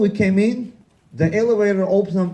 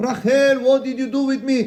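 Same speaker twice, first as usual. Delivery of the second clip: high-pitched screaming; 7 semitones higher than usual. Telling a story about a mental institution; imitating a man screaming. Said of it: "a different man also screaming".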